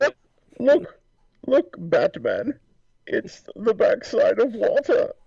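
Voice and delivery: very high, swooping, drawn-out voice. Imagining a Jungle Cruise guide showing plants: Bane voice. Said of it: "Can you imagine Bane on the Jungle Cruise?".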